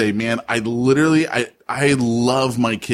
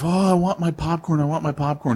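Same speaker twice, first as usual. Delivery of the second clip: put-on high, pleading little-kid begging voice; 5 semitones higher than usual. Retelling how he begged the speaker's wife after dinner, imitating begging. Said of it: "he's like begging my wife".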